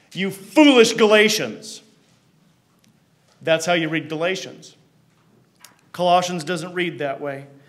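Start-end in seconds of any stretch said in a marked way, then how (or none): 0.2-1.9 loud, aggressive, swooping, angry scolding yell. Reading Galatians the way Paul would, Paul yelling at his audience. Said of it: "what it sounds like for Paul to yell at his audience".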